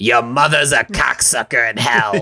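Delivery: put-on old, lifelong smoker's voice. Describing a movie scene, quoting her line to a priest in an old smoker's voice. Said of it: "in this like old smoker's voice".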